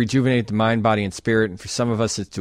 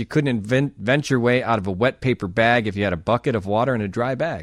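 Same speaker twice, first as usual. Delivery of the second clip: ordinary delivery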